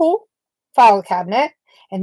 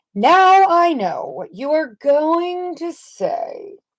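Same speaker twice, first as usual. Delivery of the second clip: mildly sarcastic, pitched up; 5 semitones higher than usual. Reading a picture book aloud, a character speaks: sarcastic. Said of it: "he's saying that kind of sarcastically".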